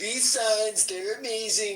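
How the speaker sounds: put-on politician voice with Chinese accent. Imitating a video maker doing Donald Trump: Donald Trump impression with Chinese accent. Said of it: "the funniest Donald Trump impression".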